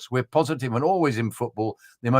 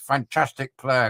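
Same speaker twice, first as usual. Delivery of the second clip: mock grudging tone through gritted teeth. Imitating a manager grudgingly praising a rival: imitating someone speaking through gritted teeth. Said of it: "through gritted teeth".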